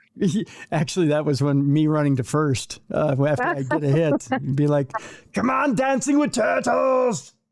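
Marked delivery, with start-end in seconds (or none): 5.4-7.3 put-on very high-pitched Austrian accent. Retelling what he'd shout as the speaker ran to first, Schwarzenegger-like Austrian accent. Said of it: "He sounded a lot like uh, Arnold Schwarzenegger because he was from uh, Austria".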